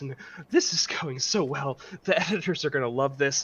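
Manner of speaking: nervous, anxious muttering. Voicing a character smearing ink across her forehead: nervous. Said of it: "she starts to get per- kind of nervous".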